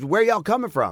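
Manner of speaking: acted-out, high screaming holler. Retelling how a crew member called out to arriving riders: imitating a crew member screaming. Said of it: "and he screams".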